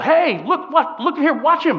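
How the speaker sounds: loud yelling with laughter.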